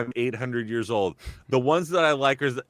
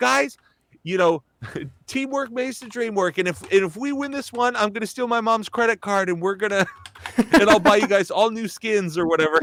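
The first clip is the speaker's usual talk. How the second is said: put-on high-pitched young kid voice; 8 semitones higher than usual. Describing a gamer who uses a voice changer, imitating McTwisted's young kid voice. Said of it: "a voice changer to make it sound like he's younger".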